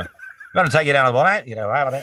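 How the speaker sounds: put-on thick Aussie accent. Recounting a past exchange, imitating how someone talked and what was said, using a thick Australian accent. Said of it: "Can I hear more of that Aussie accent".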